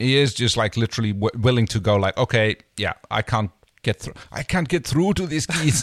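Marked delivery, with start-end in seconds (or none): 2.2-5.8 put-on Scottish accent. Retelling a character's line about the keys: Scottish Edward James Olmos impersonation. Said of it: "Did you just do a Scottish impersonation of Edward James Olmos?".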